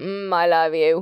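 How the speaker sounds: sleepy, half-awake, low, drowsy murmur. A man in bed answers his fiancée as she heads out, murmured drowsily. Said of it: "he murmured drowsily".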